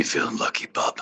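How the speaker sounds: tough-guy comic-book brawler hero voice. Performing a line after being asked for a bub: Wolverine voice. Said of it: "give me your best bub".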